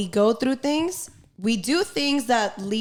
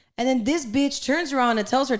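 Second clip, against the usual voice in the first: plain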